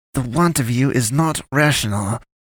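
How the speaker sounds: high, hissing voice. Narrator reads the pastoress's line as she is pinned against a wall, hissing. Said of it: "she hissed".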